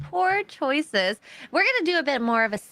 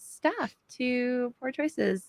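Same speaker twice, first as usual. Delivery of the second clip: normal talking voice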